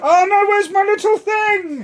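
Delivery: shrill, very loud, high-pitched full-volume shout. Looking for a lost little coin, shouting. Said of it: "Why are you shouting?".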